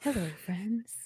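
soft, calm, eased-into delivery. Imitating a golf announcer's nice calm voice. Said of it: "Jim Nantz talking in his nice, calm voice".

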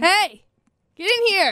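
high-pitched, loud yelling. A podcast host calls someone over to join the podcast, yelling. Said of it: "I like when you invite people on our podcast by yelling at them".

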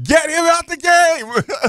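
very high, slow holler, last word stretched. Retelling a reaction to a player's play on TV: imitating own yell. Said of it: "I was literally yelling".

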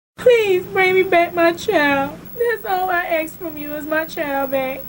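desperate, gut-wrenching pleading. Begging for her kidnapped baby's return: gut-wrenching plea. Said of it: "a young mother's gut-wrenching pleas".

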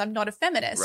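ordinary talk, nothing marked

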